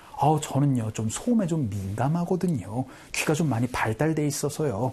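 plain

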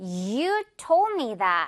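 hard, slow stress with YOU drawn out.

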